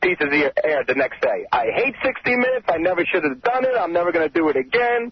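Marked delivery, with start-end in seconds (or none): 1.5-5.1 griping wryly, full of regret. Doing an impersonation of Howard after the piece airs: Howard impression. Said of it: "this is an impersonation of you".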